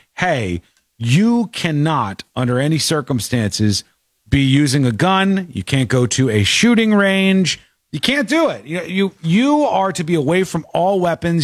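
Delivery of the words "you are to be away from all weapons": ordinary talk, nothing marked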